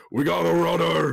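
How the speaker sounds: very high, raspy, rough orc voice shout. The game master voices an orc man vaulting over the counter, orc man shouting. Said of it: "hear uh, this orc man shout".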